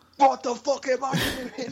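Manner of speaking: put-on pushed, weird, very high Cockney accent. Describing learning to cook from videos, doing a failed Gordon Ramsay impression. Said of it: "That was some weird Cockney guy".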